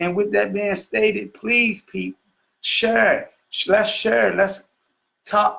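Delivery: heartfelt, emotional, earnest tone. Speaking to an audience before asking a co-host to take over, getting emotional. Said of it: "I'm getting emotional".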